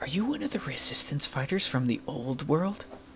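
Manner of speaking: half-whispered, hushed, under the breath. Voicing a character who approaches a player secretly: half-whispering.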